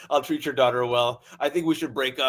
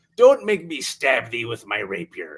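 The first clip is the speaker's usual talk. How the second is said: put-on old sea-captain character voice, pitched lower; 3 semitones lower than usual. Playing a hook-handed character threatening someone, in an old sea captain voice. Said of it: "He goes".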